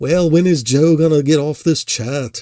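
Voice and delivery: really poor put-on English accent. Reading the chat, the speaker voices Dan's imagined reply: bad English accent as Dan. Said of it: "I just do a really bad English accent".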